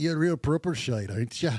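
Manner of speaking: put-on Irish accent. Joking with bandmates in put-on accents: put-on Irish accent. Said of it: "That was Irish now".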